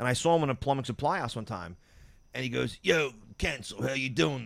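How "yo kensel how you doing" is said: slow, rough, gravel-voiced speech. Retelling meeting a guy at a plumbing supply house: imitating a gravelly-voiced guy. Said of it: "a really gr-, gravelly voice".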